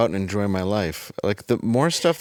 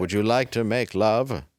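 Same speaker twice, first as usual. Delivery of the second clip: put-on robot voice. Imitating Elon Musk talking to his partner: robotic Elon Musk voice. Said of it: "That's how Elon talks, is like a robot".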